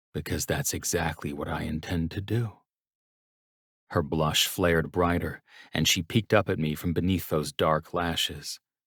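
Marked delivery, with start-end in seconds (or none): 0.1-2.5 lowered, dropped voice, quieter. Reading a scene aloud, the narrator answers quietly down the hall: dropped voice. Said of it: "I dropped my voice".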